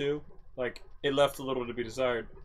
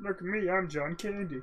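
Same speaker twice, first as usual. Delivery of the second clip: bad impression, high, slow, froggy puppet-like voice; 5 semitones higher, 5 dB quieter than usual. Joking after praise of John Candy's role: John Candy impression that sounds like Kermit. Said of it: "why does he sound like, uh, Kermit?".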